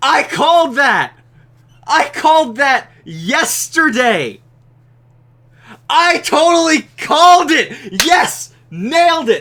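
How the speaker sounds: very high, very loud excited yelling. Reviewing a new card, the speaker celebrates having called it: excited shouting. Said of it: "sorry for shouting".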